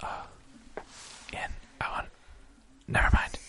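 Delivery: soft, unvoiced whisper.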